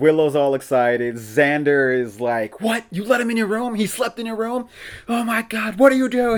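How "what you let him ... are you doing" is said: acted frantic freak-out, very high. Recapping an episode, the speaker acts out Xander's reaction, imitating Xander freaking out. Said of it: "Like freaking out".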